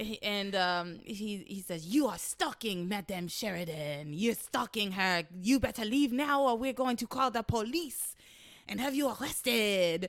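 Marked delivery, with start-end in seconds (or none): 1.8-10.1 put-on French accent. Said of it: "I can only do the French accent for so long".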